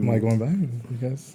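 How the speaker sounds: very hushed, slow, drawn-out half-whisper under the breath. Asking the group if going back: half-whispering under the breath. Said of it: "Why do you keep whispering under your breath".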